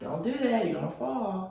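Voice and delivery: put-on gentle sweetness.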